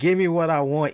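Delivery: ordinary delivery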